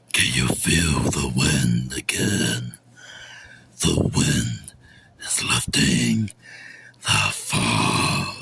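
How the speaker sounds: very slow, breathy, demon-like whisper. Opening a video before introducing themself as the media guy: demonic voice. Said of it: "Sorry for that demonic voice".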